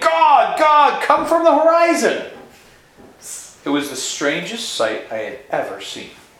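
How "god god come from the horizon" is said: put-on very high, loud shout with mouth full. Retelling a man in a tree shouting: imitating a shout while chewing. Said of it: "trying to chew them while he was shouting".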